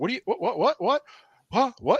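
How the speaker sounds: very high, stunned, stammering, shocked disbelief. Retelling how interviewers reacted to being told no: imitating shocked people. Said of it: "and they were shocked".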